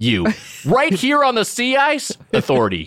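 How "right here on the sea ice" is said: more indignant, louder shouting, higher pitch.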